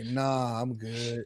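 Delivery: mock voice of a drunk. Retelling offering drunk Quentin help getting home: imitating drunk Quentin.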